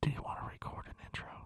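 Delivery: unvoiced, teasing whisper.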